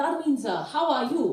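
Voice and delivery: put-on Chinese accent. Telling a joke, quoting a man greeting a woman, in a put-on Chinese accent. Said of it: "this joke does not make sense unless I can do his accent".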